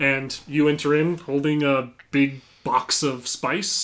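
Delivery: ordinary delivery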